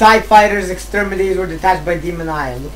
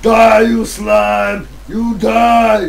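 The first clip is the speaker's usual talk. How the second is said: flat monotone, the word die drawn out; 4 semitones higher, 4 dB louder than usual. Playing a video game with friends, doing a Terminator voice. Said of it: "I have to make a Terminator voice".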